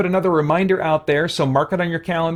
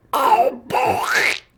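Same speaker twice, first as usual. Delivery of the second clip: terrible, pitched-up cartoon duck voice; 7 semitones higher than usual. Trying out the voice his mom used to say it in: terrible Donald Duck voice. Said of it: "I have a terrible Donald Duck".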